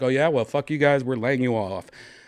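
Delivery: normal talking voice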